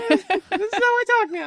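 very high, squeaked-up voice. A dungeon master running the game for players, voice up a couple octaves. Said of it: "your DM's voice goes up a couple octaves".

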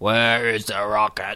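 low, gravelly, very quiet hushed voice. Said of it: "gravelly but very quiet at the same time".

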